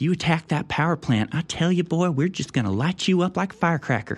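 mocking put-on feminine voice. Mocking Lindsey Graham's remarks, doing Lindsey Graham in a feminine voice. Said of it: "in his feminine voice".

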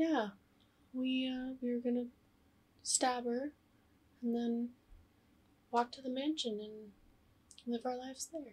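put-on soft, offhand, casual, nonchalant young girl's voice. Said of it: "so matter of fact, so, like, nonchalant".

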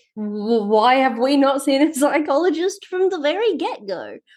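strange, odd voice, pitched high.

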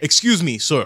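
loud, projected yelling call. In the game, a character calls out to one of the ranger people: yelling over to someone. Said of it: "He kind of uh, yells over".

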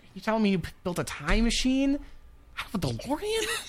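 put-on high, swooping incredulous teen voice.

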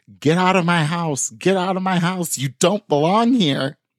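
small, urgent screaming cry. Retelling a woman at the door screaming at a man, imitating the screaming. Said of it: "started screaming at him".

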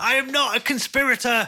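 very high, slow, drawn-out panicked near-breakdown outburst. A tabletop player voices their character after a hand tries to grab him; Volley's panicked outburst. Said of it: "Volley almost has, like, a little breakdown".

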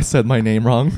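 ordinary talk

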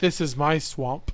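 soft, close, hushed whisper. Retelling a line someone whispers in the ear: imitating a whisper. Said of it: "He whispers in my ear".

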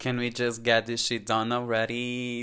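plain

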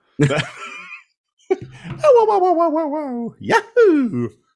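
very high, loud, wildly swooping squealed whoas. Retelling a character's bicycle-kick yell, sounding like Mario: imitating Mario. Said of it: "That sounded more like Mario".

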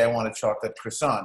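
ordinary talk, nothing marked

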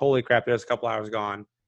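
ordinary talk, nothing marked

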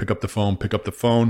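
ordinary delivery

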